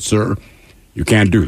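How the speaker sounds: ordinary talk, nothing marked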